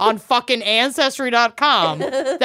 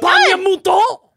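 over-the-top put-on French accent, higher and louder; 10 semitones higher, 4 dB louder than usual. Repeating the line when asked to again: exaggerated fake french accent. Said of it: "I wanna hear you do it again".

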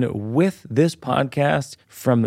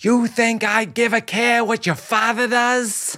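very high, heavy, thick put-on Boston accent; 10 semitones higher than usual. Retelling what a man suddenly said to two siblings, in a thick Boston accent. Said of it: "thick, thick Boston accent".

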